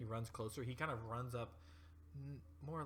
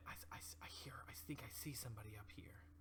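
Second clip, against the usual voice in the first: slight, hushed whisper; 7 dB quieter than usual. Game narrator voicing a character pointing to Rosemary: whispering a little. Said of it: "he whispers a little bit".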